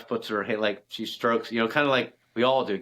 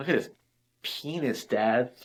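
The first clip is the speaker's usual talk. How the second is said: plain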